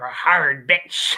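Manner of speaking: very low pirate voice. Retelling a line from a kaiju film, the speaker quotes a character in a pirate voice. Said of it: "he sounds like a pirate".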